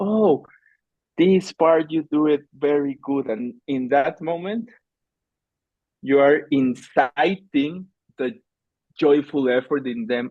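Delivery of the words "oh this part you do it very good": gentle, kind, encouraging, empathic tone. Acting out praising workers before asking for a fix: imitating kind, empathic praise. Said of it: "very kind and empathic".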